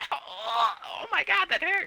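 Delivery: very high, slow, drawn-out squeaky voice. Reenacting a script line written for a squeaky voice: high squeaky voice. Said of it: "that's what's written down in that exact voice. It says in a squeaky voice".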